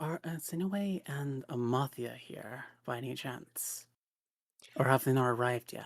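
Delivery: whispering in character voice. Voicing a character leaning down to ask quietly: whispering in character. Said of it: "she's whispering this".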